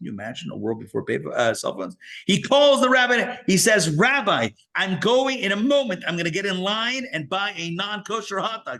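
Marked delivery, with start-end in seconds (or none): 3.9-8.8 acted, upset, high-pitched screaming. Telling how a man called the rabbi from a payphone, retelling a scream on the phone. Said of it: "He's like screaming on the phone".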